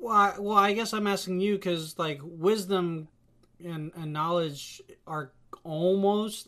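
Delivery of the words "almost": stress on the word almost. Answering whether knowledge and wisdom differ: stress on ALMOST. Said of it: "I stress the word almost".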